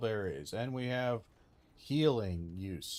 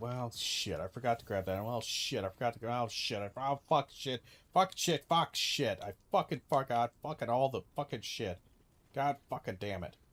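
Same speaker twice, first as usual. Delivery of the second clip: mock exasperated, frustrated outburst. Complaining about Monster Hunter, acting out what you always end up saying: imitating frustrated cursing. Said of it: "you're always gonna go".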